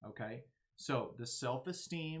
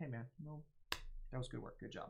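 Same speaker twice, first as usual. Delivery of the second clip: quiet, quick, understated and offhand delivery; 6 dB quieter than usual. Demonstrating quiet praise as one type of feedback, speaking quietly. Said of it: "someone that's really quietly being like".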